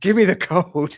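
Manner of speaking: play-acted fierce, high, loud screaming. Retelling how she pinned the man's hand and demanded the code, retelling a scream.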